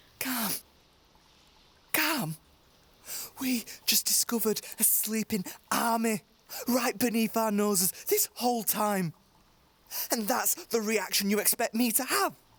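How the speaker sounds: upset incredulous outburst. Answering a plea to calm down after discovering a sleeping army: agitated outburst. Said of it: "You need to calm down".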